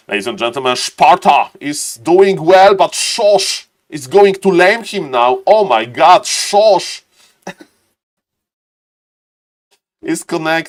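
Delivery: put-on German accent. Stream caster announcing a match between two players, in a fake German accent. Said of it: "in this uh, fake German accent".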